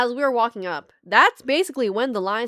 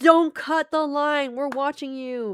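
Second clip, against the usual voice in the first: imitated yelling, higher; 5 semitones higher than usual. Retelling what people in a crowded line kept yelling: imitating people yelling. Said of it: "They kept yelling".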